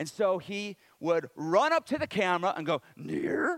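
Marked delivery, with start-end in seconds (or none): 3.0-3.6 high-pitched character voice. Retelling a puppet teaching near and far: Grover voice. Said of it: "That's Grover's voice".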